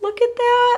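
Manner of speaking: high, slow, mock-sad whining voice. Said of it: "I'm so sad".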